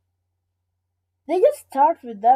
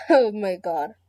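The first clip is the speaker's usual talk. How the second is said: breaking into laughter, unable to hold in a giggle. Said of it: "I can't say the title without laughing".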